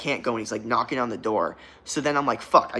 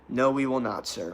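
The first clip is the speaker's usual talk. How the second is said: polite, deferential tone; 4 dB quieter than usual. Retelling own reply to a man who asked about a problem: imitating own respectful reply. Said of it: "I was very respectful".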